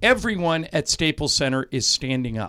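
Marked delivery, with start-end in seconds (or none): none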